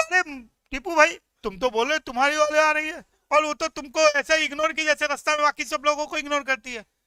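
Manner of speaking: loud, angry voice. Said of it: "Adil को गुस्सा आया, बोला".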